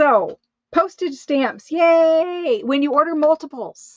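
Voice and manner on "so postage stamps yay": very slow, loud, shrill, stretched-out screaming. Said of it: "sorry for screaming".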